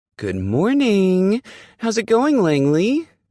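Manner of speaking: shrill, way too chipper, high and loud, pitch climbing. Reading a caller's morning greeting to a just-woken narrator, way too chipper. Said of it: "the way too chipper voice".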